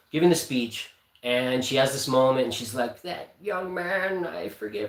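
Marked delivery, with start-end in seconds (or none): 3.0-4.9 put-on high, slow elderly woman's voice. Retelling a line a woman said during a speech, in an old lady voice. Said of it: "I don't know why I'm sounding like an old lady now".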